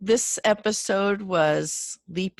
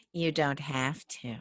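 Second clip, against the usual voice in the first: put-on snide, catty, bitchy mean-girl delivery; 5 semitones lower, 9 dB quieter than usual. Retelling a tv character's cutting reply to another speaker in a catty put-on voice. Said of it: "your cunty voice".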